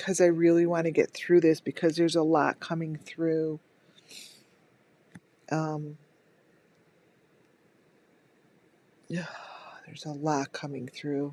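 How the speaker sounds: voice holding back tears. Pushing on through an emotional moment while trying not to cry: holding back tears. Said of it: "I'm trying not to, to cry".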